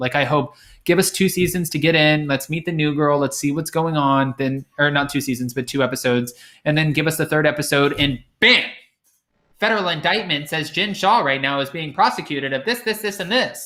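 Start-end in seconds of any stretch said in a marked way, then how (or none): 9.6-13.7 little robotic computer news anchor voice. Wishing a show would break the news in a little computer news voice. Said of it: "give us that little computer voice from N B C".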